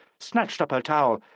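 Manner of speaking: ordinary delivery, nothing marked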